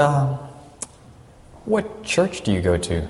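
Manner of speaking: quiet, timid, hesitant, sheepish voice. Retelling how the nurse quietly asked a question: imitating a quiet sheepish question. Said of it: "sort of sheepishly".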